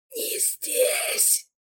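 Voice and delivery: words forced out in a strained, effortful groan. Reading a story where a choking governor forces out words, a strained moan. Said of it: "с трудом простонал он".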